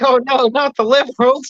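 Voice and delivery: squeaky, very high-pitched voice. Acting out how a buddy from chat reacts: imitating Aaron. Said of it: "Aaron's like".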